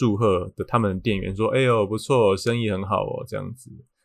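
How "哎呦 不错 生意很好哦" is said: snide, sour, mocking sarcasm. Retelling how a rude shop clerk congratulated them: imitating a sarcastic clerk. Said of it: "以讽刺，讽刺的这个语气".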